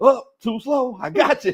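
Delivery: put-on very high old man voice. Retelling how a cousin talked trash on the court: imitating Bill's old-man trash talk. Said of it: "Bill was talking trash like an old man".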